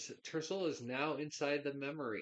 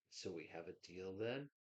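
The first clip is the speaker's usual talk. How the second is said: dry, bony, skeletal, raspy voice; 6 semitones lower, 10 dB quieter than usual. Narrating a scene, voicing a voice heard in the listener's thoughts: skeletal, raspy voice. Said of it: "this skeletal, raspy voice say".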